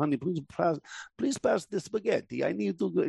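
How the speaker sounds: slow, unhurried, put-on movie-style Russian accent. Acting out talking to one's wife after a movie with Russians, Russian accent. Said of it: "we'll watch a movie and there's Russians".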